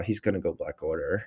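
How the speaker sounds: hushed half-whispered stage whisper. Retelling a prediction half-whispered to people in the spectators section: retelling a half-whisper. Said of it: "I just whispered to people".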